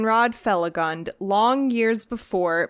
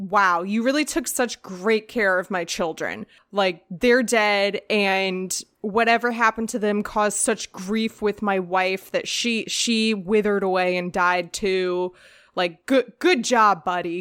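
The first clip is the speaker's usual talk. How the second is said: ordinary delivery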